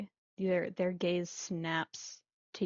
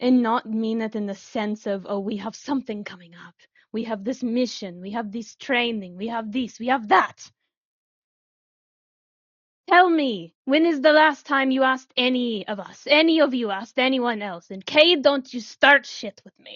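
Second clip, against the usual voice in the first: malicious tone, higher and louder; 4 semitones higher, 12 dB louder than usual. Voicing a character swinging the door open, answering Juliet: full of malice. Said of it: "are you talking like this all of a sudden".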